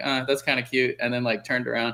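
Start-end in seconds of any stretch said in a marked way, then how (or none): none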